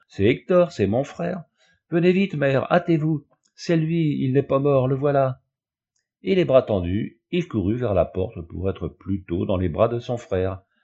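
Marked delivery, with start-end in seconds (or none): 0.2-5.4 crying out in true joy, pitched high. A man recognizes his brother, believed dead, and calls to his mother: crying out with true joy. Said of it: "S'écria-t-il avec un véritable transport de joie".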